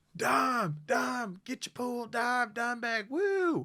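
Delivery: very high-pitched, loud crowd yelling. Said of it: "So this is how it would go".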